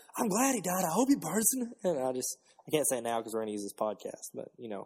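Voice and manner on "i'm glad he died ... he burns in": put-on Southern accent, high-pitched. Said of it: "I was doing my Southern impression".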